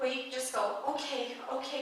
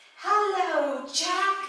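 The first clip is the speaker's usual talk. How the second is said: put-on high, raised female voice with British accent; 7 semitones higher, 6 dB louder than usual. Voicing a female character addressing jack: female voice with british accent. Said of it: "I guess it has a British accent too".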